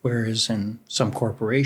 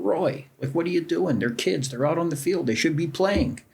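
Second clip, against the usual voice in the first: high, pitched-up yell; 6 semitones higher than usual. Retelling what club members said: imitating members yelling. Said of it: "half our membership yelling at me".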